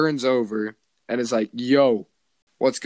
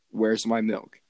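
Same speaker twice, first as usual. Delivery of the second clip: mock, seriously confused tone; 2 semitones lower than usual. Retelling a prank story, acting out the boy's reaction, acting out serious confusion. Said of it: "like seriously confused".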